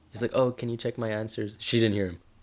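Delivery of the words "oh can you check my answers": barely audible, quiet, low put-on mumble. Telling of a classmate the teacher couldn't hear, the speaker imitates him: low voice. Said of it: "speaking in such a low voice".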